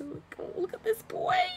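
put-on sweet, very high-pitched babyish baby talk. Showing how they talk to their favorite anime characters, baby voice. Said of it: "I do baby voice with my favorite characters".

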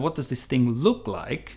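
ordinary talk, nothing marked

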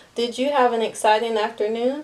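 plain reading voice

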